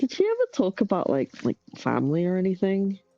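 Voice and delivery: put-on embarrassed, hesitant, sing-song little-kid voice. Retelling how she asked about family: imitating an embarrassed childlike question. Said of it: "a child that's, like, about to ask something, like, really embarrassing".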